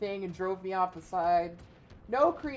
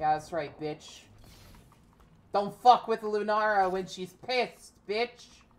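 furious, pissed-off, angry taunting tone. Taunting an opponent after a kill in the game: angry, pissed off. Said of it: "I'm fucking pissed".

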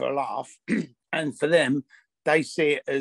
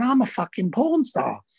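put-on strong Manchester accent; 9 semitones higher than usual. Retelling a woman's reply when asked what she does, in a thick Mancunian accent. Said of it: "she's got this really thick Mancunian accent".

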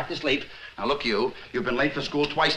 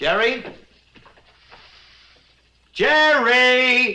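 shrill, very high, stretched-out calling holler; 11 semitones higher, 8 dB louder than usual. Waiting for Jerry to finish washing up, the speaker calls his name, hollering a name. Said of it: "Don't holler!".

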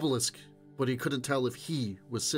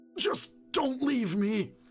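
gasping, much higher pitch; 10 semitones higher than usual. A moaning man pleads with the other man not to leave, gasping. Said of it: "he gasped".

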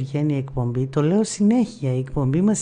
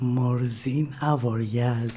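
put-on French accent, name pronounced the French way; 3 semitones lower, 4 dB quieter than usual. Repeating a phrase for a friend who teased their accent, in a French accent. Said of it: "από γαλλικά να το ξαναπώ".

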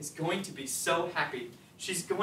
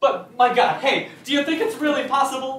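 high, very loud, excited shouting; 7 semitones higher, 10 dB louder than usual. In a play scene, a character speaks so loudly the other warns the servant will hear: shouting. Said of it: "Don't shout!".

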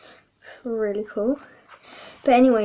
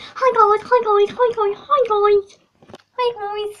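very high, teasing, mocking parody voice; 10 semitones higher, 5 dB louder than usual. Complaining about another speaker's habit, mimicking it: mocking imitation of a repeated greeting. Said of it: "you keep on just going, going, just always saying".

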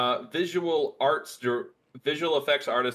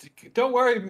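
put-on high, loud little kid voice. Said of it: "I like the kid going".

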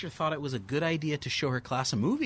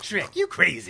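put-on cartoon animal voice; 3 semitones higher, 4 dB louder than usual. Hosts trade impressions for the day, Donkey impression. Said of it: "Pretty good".

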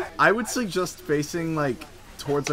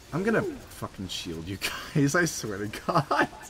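threatening manner, full menace, swooping pitch; 9 dB quieter than usual. Promising to shield teammates during a game: threatening tone. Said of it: "in, like, a threatening manner".

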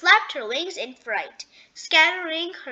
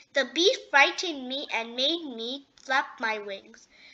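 plain

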